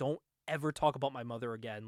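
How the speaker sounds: put-on tearful voice, holding back tears. Retelling a scene, the speaker voices a character confronting a man at gunpoint; acting out tearful line. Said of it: "heard it in my head of her with tears in her eyes".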